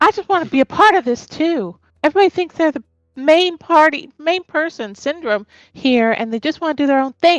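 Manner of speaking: grumbling, complaining character voice. Voicing a character who turns to the party, complaining in character. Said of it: "she's just bitching and complaining".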